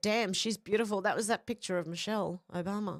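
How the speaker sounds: normal talking voice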